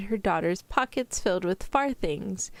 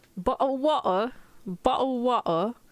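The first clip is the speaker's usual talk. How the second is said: clumsy, bad put-on British accent; 4 semitones higher than usual. The speaker admits they can't do the accent, then tries anyway: bad Love Island British accent. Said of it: "I can't really do a British accent".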